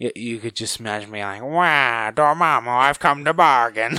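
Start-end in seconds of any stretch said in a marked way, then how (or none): 1.4-4.0 high, loud, slow, drawn-out cartoon voice. Imagining a figure as another character, in a Waluigi voice. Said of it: "the best Waluigi I could do".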